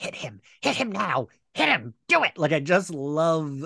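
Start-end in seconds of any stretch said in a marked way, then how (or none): 0.0-2.4 forceful, pushed-out stage whisper. Recapping a show scene, quoting a character during an interrogation: imitating a whisper-yell. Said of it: "I loved her like whisper yelling".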